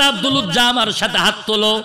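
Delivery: ordinary delivery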